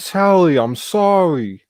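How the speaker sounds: whining put-on Brooklyn accent. Imitating a movie character apologizing: imitating a whiny brooklyn accent. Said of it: "he has that really whiny fucking Brooklyn accent".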